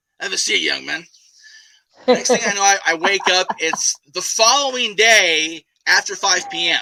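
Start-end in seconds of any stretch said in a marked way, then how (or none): 0.2-1.1 put-on gravelly voice. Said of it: "this gravelly voice saying".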